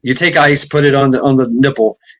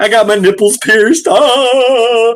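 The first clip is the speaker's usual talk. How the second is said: mock pained moan, higher; 9 semitones higher than usual. Retelling how a coworker with ice on her chest answered: imitating someone moaning in pain. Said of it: "moaning in pain".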